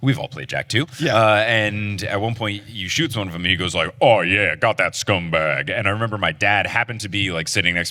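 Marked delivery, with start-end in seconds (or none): 4.0-5.7 put-on deep big guy voice, slower. Retelling a Jak two game scene where the big guy reacts; deep voice of game character. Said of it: "the big guy with the deep voice".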